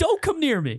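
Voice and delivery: very high, shrill, yelped words. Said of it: "He yelped it?".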